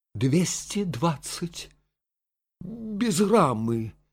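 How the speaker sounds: trembling voice. Narrator voices the young lady answering the man's question about the price, trembling voice. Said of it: "Дрожащим голосом произнесла барышня".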